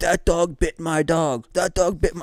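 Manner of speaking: put-on old man voice, loud, slow, deliberate, accusing. Retelling how an old man pointed at the dog: imitating the old man accusing. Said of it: "he's pointing at Whiskey like".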